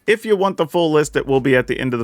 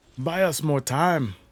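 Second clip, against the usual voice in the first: very drawn-out, slow, bad fake Irish accent; 4 semitones higher, 7 dB quieter than usual. Repeating a game voice line aloud: bad irish accent. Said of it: "That sounded like a bad, like, Irish accent".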